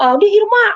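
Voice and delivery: high, loud, eager call.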